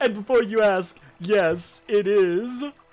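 slow, drawn-out, high, loud, deliberate voice. Voicing a character who greets the players and offers food: Cauldra Cuttlefingers voice. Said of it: "she says".

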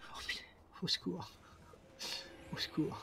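breathy, whispered, panicked. A game streamer getting advice from everyone at once, panicking. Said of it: "là c'est la panique".

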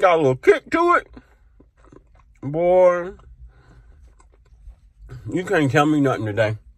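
talking while chewing with mouth open. Tasting nuggets with sriracha sauce, chewing with mouth open. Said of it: "Chewing my mouth open".

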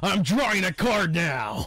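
loud, slow yell. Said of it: "I was just yelling from across the fucking park".

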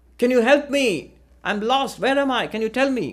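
play-acted, high, loud shout. Telling a joke, a lost balloonist calls to a man below: shouting down to someone. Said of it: "he shouts down at the man".

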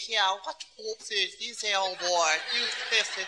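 stiff, upright, low put-on English accent. Describing how Englishmen talk, imitating how Englishmen talk. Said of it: "you have to talk like that".

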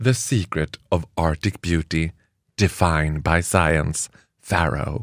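low, slow advertising slogan voice.

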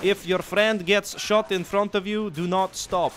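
put-on poor, muddled Russian accent. Voicing orders to the soldiers, in a bad Russian accent. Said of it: "That was probably the worst Russian accent I've done ever".

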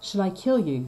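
ordinary delivery

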